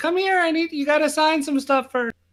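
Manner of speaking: tiny, very high squeaky voice. Game master voicing a character jumping up for the players' attention, little voice. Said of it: "you just hear this little voice go".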